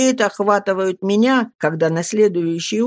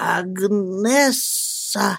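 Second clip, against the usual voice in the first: stammering, stuttering, quieter; 4 dB quieter than usual. Narrator reading the speaker calling to a woman in a theatre box, stammering. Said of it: "говорю я, заикаясь".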